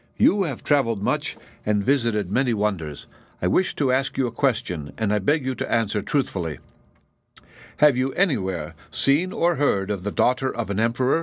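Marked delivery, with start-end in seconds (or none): none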